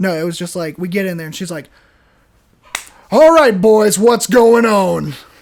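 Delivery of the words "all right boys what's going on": rough, scary, raised voice. Retelling what a rough woman said on entering: imitating a rough woman. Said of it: "she's a very rough woman".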